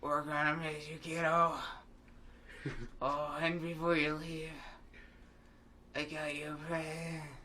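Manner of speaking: put-on, really old, shriveled-husk smoker voice. Voicing a game's mom character aloud, speaker uses a really old smoker voice. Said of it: "I don't know what kind of voice to do for this".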